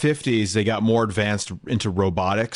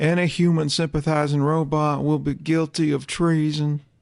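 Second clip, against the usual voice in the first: slow, pitched-up, declaiming politician's voice; 6 semitones higher than usual. Doing an impression of Bill Clinton giving Order sixty-six: Bill Clinton voice. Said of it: "You got Bill Clinton doing Order sixty-six".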